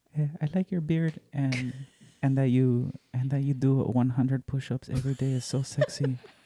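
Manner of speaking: put-on anime-style Japanese-sounding accent. Role-playing being someone's next love, in a Japanese-sounding accent. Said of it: "Why do you sound Japanese".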